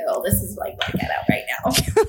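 soft voiceless whisper.

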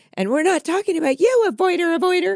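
mock, very high, climbing, rising scream. Retelling a scene where Summer screams at another woman, imitating Summer screaming. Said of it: "Summer starts screaming at her".

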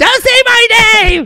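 loud, high yelling voice.

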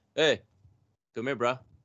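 very bad put-on Hawaiian pidgin accent. Retelling what a friend from Hawaii said: bad Hawaiian pidgin accent. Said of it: "my Hawaii pidgin guy is horrible".

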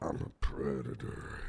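very low breathy whisper. Joking about doing ADR, the speaker shows how he would go: very low Vin Diesel voice. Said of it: "it's got to be even lower".

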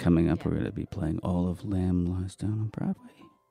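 sexy, late-night 1970s FM radio DJ voice. Announcing an album on the mic in a 1970s FM radio voice. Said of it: "This is getting my 1970s FM voice".

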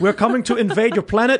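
robotic South African voice. As one of the militaristic Musk clan, announce an invasion in a robotic South African Elon Musk voice. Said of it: "Like robots, South African robots".

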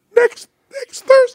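very high, slow damaged cartoon mouse voice. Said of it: "gonna talk like this".

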